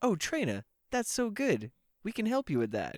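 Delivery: pitch way up and swooping around. Acting out a game scene, voicing the professor character: Professor Willow voice. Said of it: "I like your Professor Willow voice".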